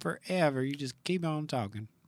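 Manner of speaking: put-on Texas accent. Quoting what a mother likes to say: imitating Eric's mother's accent. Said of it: "Did I get her accent right?".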